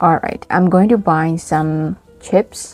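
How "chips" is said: chips lifted with rising tone at the end. Listing groceries in an intonation lesson, rising tone on chips. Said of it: "when you say chips, milk, yeah, you have to use the rising tone".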